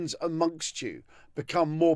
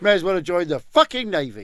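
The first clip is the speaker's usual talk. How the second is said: raised, sulky, disgruntled pirate grumble; 2 semitones higher, 6 dB louder than usual. Imagining sitting below deck after a battle: sulky Chinese pirate impression. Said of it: "Your impression of a Chinese pirate is superb".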